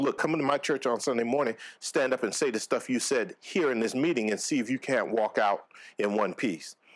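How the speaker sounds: normal talking voice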